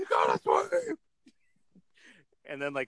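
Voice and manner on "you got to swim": imitated scream, higher. Retelling a curler on the Canadian team yelling: imitating a curler screaming. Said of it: "the dude was just screaming".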